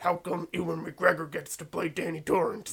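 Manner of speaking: movie superhero voice, caped masked-vigilante style. Joking about a commercial, play the actor asking about a part, in a Batman-like Bryan Cranston impression. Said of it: "Is that your Bryan Cranston impression? It sounds like Batman".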